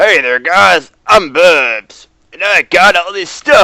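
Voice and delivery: very loud, high-pitched cartoon voice, shouted. Describing how a voice mixes high and low, the speaker tries an attempted Bubs voice. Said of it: "I can't do Bubs' voice".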